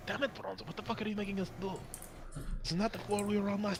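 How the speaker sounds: close, quiet half-whisper. Character gets real close to another character's ear, half-whispering in his ear. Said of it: "he whispers in his ear".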